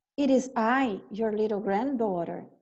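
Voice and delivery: ordinary talk, nothing marked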